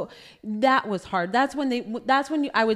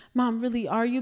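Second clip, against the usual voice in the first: usual speaking voice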